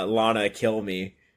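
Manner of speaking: acted pleading, begging voice. Retelling a comic scene where Lex Luthor begs: imitating Lex Luthor begging.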